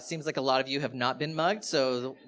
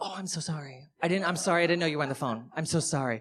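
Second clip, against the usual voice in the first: mock-apologetic put-on sorry voice, higher; 3 semitones higher than usual. Telling a mugging story, acting out muggers who see you're on the phone, imitating an apologetic mugger. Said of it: "they'll see that you're on a phone and they'll go".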